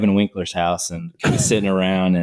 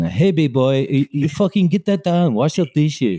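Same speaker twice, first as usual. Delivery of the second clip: pitched-up, hollering, yelling voice; 7 semitones higher than usual. Retelling how the restaurant boss yelled in the kitchen: imitating Jackson Lee yelling. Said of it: "he was always yelling around in the kitchen".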